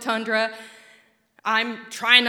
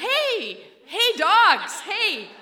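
mock very high, very slow, swooping, drawn-out shout; 9 semitones higher, 3 dB louder than usual. Retelling shouting at the sled dogs: retelling own shout. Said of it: "So I start shouting".

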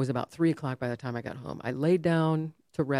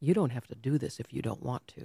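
much lower-pitched and quieter than her usual voice; 4 semitones lower, 4 dB quieter than usual. Retelling what a woman with a pen and paper said, leaning in: low voice. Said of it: "in a voice that was not hers, it was lower than mine".

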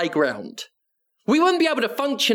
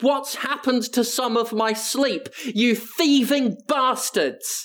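put-on furious, angry, ranting cry of outrage; 3 semitones higher than usual. Retelling waking up to the clock change: imitating own angry outburst. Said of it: "I got that angry at it".

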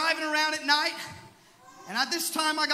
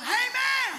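sudden yell, high-pitched. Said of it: "and I just yelled".

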